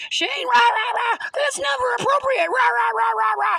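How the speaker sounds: very high, shrill, loud, in-your-face angry scolding. Retelling a manager scolding the speaker up close: imitating an angry scolding. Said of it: "she's right in my face".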